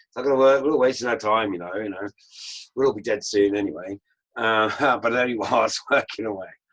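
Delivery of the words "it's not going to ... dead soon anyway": grumbling moan, louder in bursts. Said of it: "always moaning about everything".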